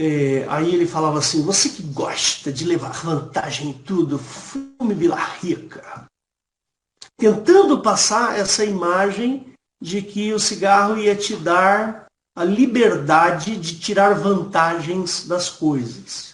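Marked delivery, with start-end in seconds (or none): 1.4-6.1 put-on cheeky Rio de Janeiro accent. Speaker quotes a footballer's line from a cigarette ad, Gerson's cheeky Carioca accent. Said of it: "ele tinha aquele sotaque carioca".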